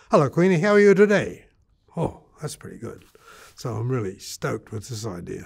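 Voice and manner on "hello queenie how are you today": fast, rushed, very loud, high-pitched delivery. Speaker repeats their earlier greeting to someone, now a bit faster. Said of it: "I can say that even a bit faster".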